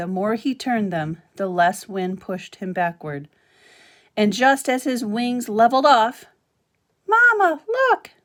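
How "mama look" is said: very high-pitched, loud squeaking voice. Narrator reading Brightbill calling to his mother as his feet leave the ground: squeaky voice. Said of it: "he squeaked as his feet left the ground".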